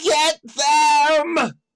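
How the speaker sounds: shrill, very high full-volume scream, "them" stretched. Narrating a game scene, voicing her as she sends the quaggoths in: screaming at the top of her lungs. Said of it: "She screams".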